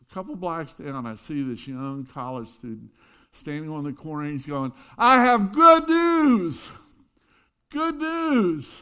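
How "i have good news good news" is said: very high, very loud, slow, drawn-out proclaiming shout. Retelling a young college student standing on a corner; imitating someone shouting. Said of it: "at the top of his lungs".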